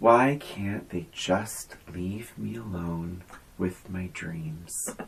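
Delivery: acted-out, very quiet, low, grave, solemn tone. Repeating a movie character's line for the other speaker, imitating Uncle Frank solemnly. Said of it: "He says it so solemnly and seriously".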